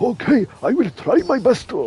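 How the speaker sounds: put-on very high, swooping, forced Japanese accent. Mocking a game voice actor told to sound more japanese: imitating put-on japanese accent. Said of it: "they've gone no in a more Japanese accent".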